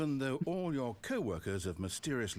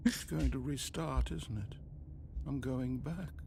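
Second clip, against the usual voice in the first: sorrowful, dejected, sad-sounding voice; 3 semitones higher than usual. Narrating as the player keeps jumping off the platform: sad voice. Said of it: "He's so sad".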